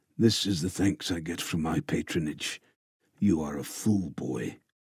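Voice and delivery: words forced out past a clenched jaw. The knight answers the boy he must free from his service, through gritted teeth. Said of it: "Through gritted teeth, the knight utters".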